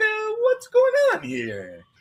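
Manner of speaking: very high, swooping pitch, vowels drawn out. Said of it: "his voice will go way up".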